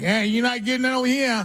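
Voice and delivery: put-on very high, whiny New York accent. Recalling a Green Bay teammate's complaining, Frank's whiny New York accent. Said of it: "he had this New York, Chicago accent voice that was always whining like".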